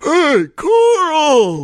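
very high, swooping, booming call, word stretched. Retelling being spotted from across a huge room: Mr. Sutherland's booming call. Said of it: "I hear this booming voice".

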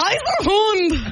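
slow, high German accent. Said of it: "I have a feeling you would have a good German accent".

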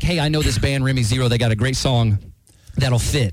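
ordinary talk

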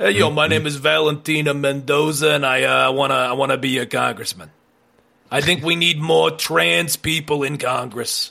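put-on New Jersey accent. Friends invent a North Jersey candidate and voice her; Valentina Mendoza, New Jersey accent. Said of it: "it's got to have a New Jersey accent".

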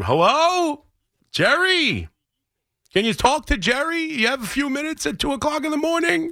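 very high, hyped-up, excited shouting, acted out. Retelling yelling at a guy from the middle of the room, retold yell. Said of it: "I was yelling in the middle of the room".

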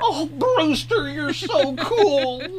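very high sidekick voice, cool and drawn out. Listing vampire movies, imitating the friend from Fright Night. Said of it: "Don't I sound like the dude, the guy's friend".

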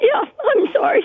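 very high, tearful voice, crying through it. Recounting a stranger's kindness, apologizing after the listener notices; crying. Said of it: "I can hear it in your voice".

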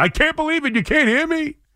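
put-on shrill, very high, frustrated screaming. Imagining a caller stuck on hold, imitating screaming at the phone. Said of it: "he's screaming at the phone going".

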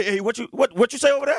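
play-acted, very high, wary, suspicious voice. Imitating another speaker who hears people whispering: imitating a friend reacting suspiciously. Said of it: "if somebody whispers something".

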